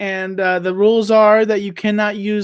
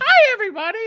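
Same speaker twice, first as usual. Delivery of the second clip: pitched up with a swooping tune; 13 semitones higher than usual. Asked if they can do Big Bird, trying out a Big Bird voice. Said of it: "Can you do Big Bird?".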